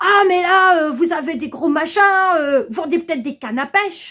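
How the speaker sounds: put-on high-pitched Alsatian accent. Retelling what a guy asked him: old Alsatian accent. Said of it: "il avait un vieil accent alsacien".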